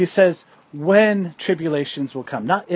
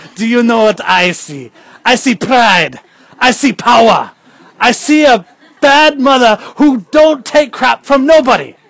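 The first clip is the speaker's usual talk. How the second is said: very loud, high put-on Jamaican accent; 5 semitones higher, 10 dB louder than usual. Quoting a teammate's words to Junior in an imitated Jamaican accent. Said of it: "I'm trying to do my Jamaican voice".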